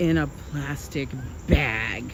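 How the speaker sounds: very slow, contemptuous, disdainful drawl with emphasis. Describing grocery store bagels, said in a disdainful tone. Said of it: "did you hear the disdain in my voice?".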